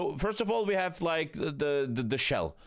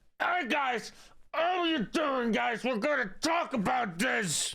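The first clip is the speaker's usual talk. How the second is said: put-on pained voice, slow and high; 9 semitones higher than usual. Mocking the video's narrator, who seems pained: imitating someone talking in pain. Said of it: "he looks like he's in pain when he's talking".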